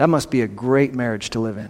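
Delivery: deadpan, dry sarcasm, dropped low. Describing a spouse who keeps tight control, the speaker comments, sarcastic. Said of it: "I hope you sense my sarcasm there".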